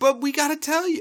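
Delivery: squeaky little filly voice, pitched very high, over music.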